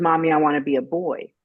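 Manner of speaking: ordinary talk, nothing marked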